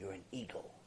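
very soft, low whisper. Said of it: "whispers in his ear".

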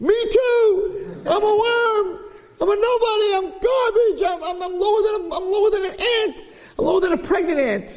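screaming in a very high voice, drawn out. Speaker retelling how new kids at a music show reacted, retelling kids screaming. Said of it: "the other new kids start screaming".

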